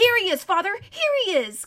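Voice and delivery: high, ringing cry, calling out loudly. Corrin drags Shasta toward his father, King Loon: crying out. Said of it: "cried Corrin".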